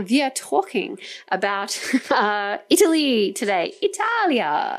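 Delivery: put-on German accent in English. Switching into an accent mid-conversation with a co-speaker: German accent. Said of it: "i'm doing my german accent now".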